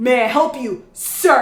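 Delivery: deep, slow, precise, clearly over-enunciated. Retelling how he stood up to the guy by the car: imitating a deep, enunciated voice. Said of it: "he enunciates clearly and with his deep ass voice".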